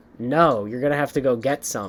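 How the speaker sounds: mock, low, most pissed-off voice possible. Retelling her reply to the professor asking for paper towels, mock pissed-off voice. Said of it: "in like the most like pissed off voice".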